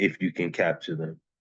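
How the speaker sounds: usual speaking voice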